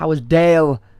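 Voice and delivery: put-on Liverpool Scouse accent. Quoting how the listener kept saying someone's name earlier: scouse accent. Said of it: "saying their name in a Scouse accent".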